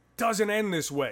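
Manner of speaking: acted high-pitched scream. Retelling a defenseman screaming on the bench during a timeout: imitating someone screaming. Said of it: "he starts screaming".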